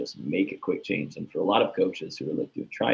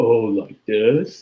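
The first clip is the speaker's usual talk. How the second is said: very loud, exaggerated sarcastic quip; 3 semitones higher, 9 dB louder than usual. Showing how an athlete overdoes a coach's change: imitating a sarcastic athlete. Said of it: "you seem like you're being sarcastic".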